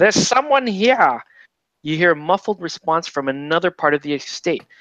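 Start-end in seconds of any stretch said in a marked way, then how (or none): 0.0-1.2 loud, high-pitched shouting. Reading a game card aloud, voicing a robed figure who bursts in: yelling robed figure. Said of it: "bursts into the entrance and yells".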